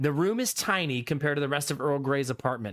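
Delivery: ordinary delivery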